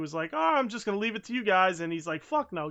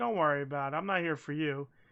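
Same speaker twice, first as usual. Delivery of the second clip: mock condescending, patronizing, brotherly brush-off tone; 3 dB quieter than usual. Retelling a wrestling segment, imitating Sting: patronizing big brother. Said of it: "Sting is doing the big brothering".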